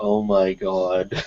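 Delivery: utterly flat, deadpan tone of despair. Retelling own reaction on video as the camera fell: imitating deadpan despair. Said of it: "Just this most deadpan, like, "My life has ended" tone of voice".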